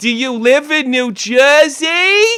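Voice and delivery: put-on Long Island accent.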